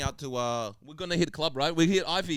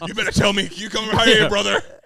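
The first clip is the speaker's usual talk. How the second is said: very loud, pitched-up bellow, belted out high; 8 semitones higher, 11 dB louder than usual. Joking about accents with friends, doing a Hulk Hogan voice. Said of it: "Hulk Hogan".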